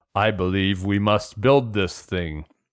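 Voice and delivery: put-on macho movie hero voice. Doing an impression of a movie star's macho line: imitating an actor's macho line. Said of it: "That was a great impression".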